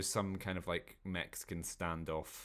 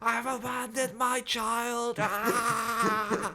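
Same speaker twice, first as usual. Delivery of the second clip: put-on over-the-top hysterical screaming, higher, louder; 8 dB louder than usual. Imitating a TikTok actor's movie scene recreations: imitating Lewis Saunderson screaming in hysterics. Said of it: "screaming over the top in hysterics".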